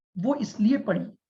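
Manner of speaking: ordinary talk, nothing marked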